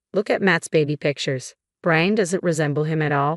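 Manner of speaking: plain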